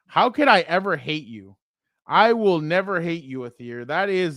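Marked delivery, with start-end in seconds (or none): none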